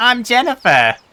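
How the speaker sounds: put-on Boston accent voice. Reading a line, the speaker says it in a Lois Griffin voice. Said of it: "I have to read that as like Lewis Lewis Griffin".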